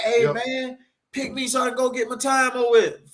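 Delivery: mock very high, eager, pleading voice. Retelling how people asked to get into jail, imitating someone begging. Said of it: "Motherfucker begging".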